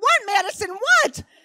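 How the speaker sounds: piercing shriek, way up high and loud. A mother retells screaming back at her daughter; retelling a scream. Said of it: "I screamed back".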